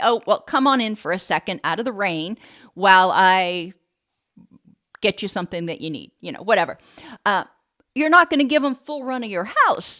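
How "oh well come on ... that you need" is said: ordinary delivery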